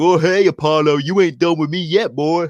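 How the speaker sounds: goofy, taunting, mocking wrestler-style voice. Retelling a wrestling segment where a rival appears on screen: imitating Big E. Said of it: "We see Big E, he pops up on the screen and he's like".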